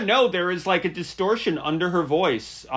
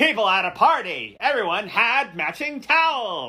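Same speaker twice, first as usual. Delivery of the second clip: slow, drawled-out new-wave singer delivery; 4 semitones higher than usual. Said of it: "That's my [name]".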